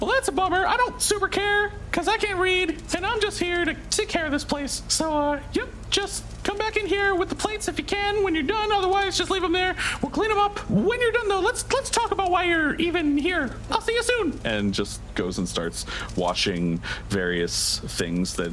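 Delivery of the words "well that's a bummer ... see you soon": very high, chatty tiny creature voice, rattled off quickly. Voicing a homunculus caretaker talking to a visiting character, little homunculus creature voice. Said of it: "I'm a homunculus. Got it. Thought so. I'm Just wanted like to a be little- sure. I'm like just a little creature. / you notice two small creatures. They are closer to bats. They're small mammalian cre".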